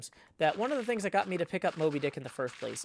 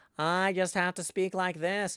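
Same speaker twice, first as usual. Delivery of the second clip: restrained Cape Cod accent. A performer demonstrates his basic voice for Ishmael: Ishmael voice, Cape Cod accent. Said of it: "a uh, Cape Cod accent for".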